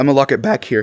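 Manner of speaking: voice breaking partway through. Teaching viewers about handling a gun, your voice cracks. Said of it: "voice crack".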